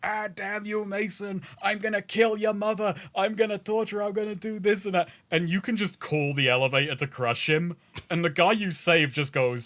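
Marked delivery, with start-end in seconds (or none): 0.0-5.1 high, ranting, nonstop screaming. Retelling what a wounded enemy in the game yells: imitating a screaming enemy. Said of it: "he's just screaming".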